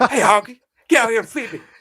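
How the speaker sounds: shrill, high, loud comedian voice, yelling. Imagining a talking toy pony, the speaker voices it in an Eddie Murphy voice. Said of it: "Can you imagine like Eddie Murphy's voice".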